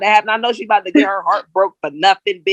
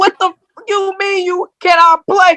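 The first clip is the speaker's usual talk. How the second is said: mock very high, incredulous yell; 9 semitones higher than usual. Rewatching a movie as an adult, speaker acts out yelling at the TV, retelling a yell. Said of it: "I'm yelling at the T V like".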